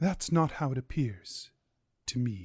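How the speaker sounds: demure, modest, reserved, soft, low voice. A game narrator voices a woman answering a man's challenge, in a demure voice. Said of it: "In a demure voice".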